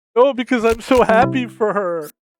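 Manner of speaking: high, blubbering fake sob through fake tears. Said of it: "and he's crying while he's watching".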